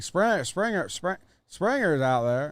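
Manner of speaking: stumbling on the first word. Showing how Ray Romano would call a play: stammering Ray Romano impression. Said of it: "I think he says it like".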